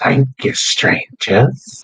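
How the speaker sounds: faint, far-off call, as if carried on wind. Voicing a melted figure's last words drifting off: faint voice on the wind. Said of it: "this faint thing on the wind".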